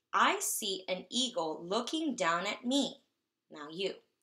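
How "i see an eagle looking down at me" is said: statement tone, pitch settling down, full stop on me. Speaker models reading a sentence that ends in a period: plain statement intonation. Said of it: "so this is how I'm going to read it".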